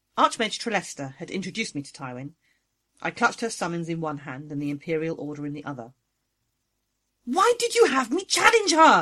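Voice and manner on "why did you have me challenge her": very high, shrill shrieking. A summoned character confronts the archmage who advised them, shrieking. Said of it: "I shrieked".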